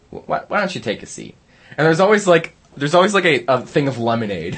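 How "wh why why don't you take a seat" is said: breathy, nearly whispered delivery. Doing a favorite impersonation after being asked: Chris Hansen impression. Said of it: "my favorite impersonation on air".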